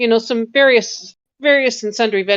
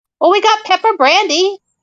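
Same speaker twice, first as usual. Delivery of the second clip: put-on very high-pitched older goblin voice; 10 semitones higher, 4 dB louder than usual. Voicing a goblin behind the counter answering a late customer: older goblin man voice. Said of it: "older goblin man".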